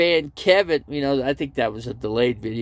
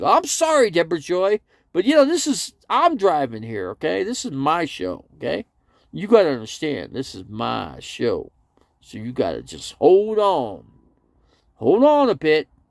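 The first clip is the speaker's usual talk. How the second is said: play-acted, animated, protesting, defensive tone. Speaker acts out what he used to say on his show, imitating his past defensive reply. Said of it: "I used to say that".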